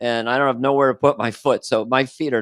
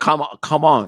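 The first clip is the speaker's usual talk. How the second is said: put-on Vietnamese accent; 3 semitones higher than usual. Quoting a woman asked how to say thank you in vietnamese, in a put-on vietnamese accent. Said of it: "You got to do the accent".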